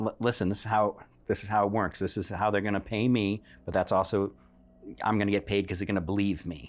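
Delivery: normal talking voice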